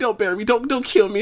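fake sobbing voice. Retelling a match against Undertaker, acting out AJ's plea, imitating AJ crying. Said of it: "He's crying, like".

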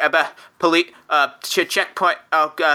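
put-on stammering voice. Voicing Trisco as the van stops at a checkpoint: Trisco stammering. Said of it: "Trisco just starts stammering".

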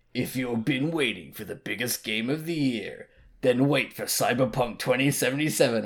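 put-on movie trailer announcer voice. Retelling how a game trailer opened, in a movie trailer voice. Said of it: "the trailer voice person just being like".

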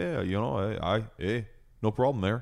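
imitated Canadian accent. Joking about picking up accents on trips north: imitating a canadian accent. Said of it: "when I go up north to Canada and I say".

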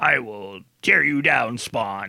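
menacing, intimidating villain voice. Reviewing the movie's cast, imitating Martin Sheen's menacing villain. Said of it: "trying to sound like menacing and intimidating".

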